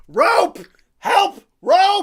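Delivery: yelling in character. Hanging in a game scene and calling for rescue: yelling in character. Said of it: "I'm just gonna yell".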